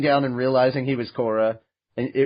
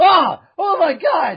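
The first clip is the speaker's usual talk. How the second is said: mock very high, stretched-out shocked cry; 5 dB louder than usual. Acting out a past life suddenly waking up mid-scene: Juan's startled yell. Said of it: "and he's like".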